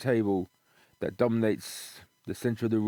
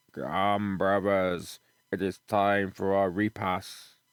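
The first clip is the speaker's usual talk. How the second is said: rumbling stone-like voice, slower; 3 semitones lower than usual. Narrating a gamebook, voicing an unseen speaker beyond the archway, voice like rumbling rocks. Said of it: "It's like the rumbling of rocks".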